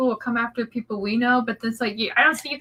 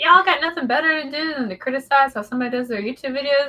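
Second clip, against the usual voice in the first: plain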